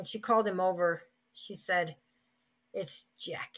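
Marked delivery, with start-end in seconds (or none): 2.7-3.6 put-on disdainful tone, much quieter. Retelling a woman calling him to the phone by her name, imitating disdain. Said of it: "she said it with such disdain".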